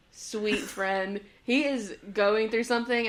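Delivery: plain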